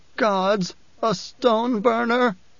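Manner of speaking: high, scared, frightened, whimpered words. Narrator reads an unnamed person's line, whimpering. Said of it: "someone whimpered".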